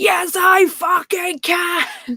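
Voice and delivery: acted-out, high-pitched scream. Retelling what a man said in a viral video, imitating Tony screaming. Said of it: "Tony screamed out".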